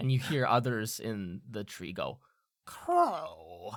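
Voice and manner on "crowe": slow, long, heavy, drawn-out groan. Narrator voicing crows in the tree saying the name Crowe, groaned out. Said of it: "kind of like groan it out".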